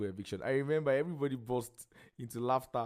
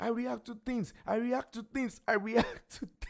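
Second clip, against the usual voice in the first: mock very high-pitched, repeated shouting; 11 semitones higher than usual. Retelling how another housemate reacted, imitating someone shouting. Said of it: "That one was just shouting".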